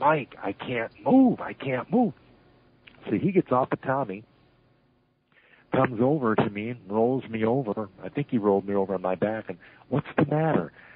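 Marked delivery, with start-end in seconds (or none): 0.0-2.1 whisper, slower. Retelling being unable to move, calling over the shoulder, whispering. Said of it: "I'm whispering over my shoulder".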